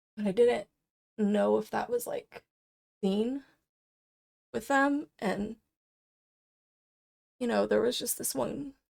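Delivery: emotional, halting, words catching and breaking mid-phrase. Reflecting on the impact on kiddos who were upset: getting so emotional. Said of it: "I'm getting so emotional".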